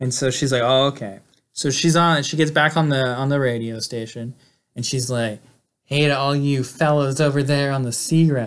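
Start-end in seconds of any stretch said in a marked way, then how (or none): 5.9-8.5 mock come-hither seductive tone. Retelling a woman greeting the fellas on the seagrass over the radio: mock-seductive voice. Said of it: "I'm trying to be seductive".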